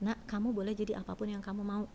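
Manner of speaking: ordinary talk, nothing marked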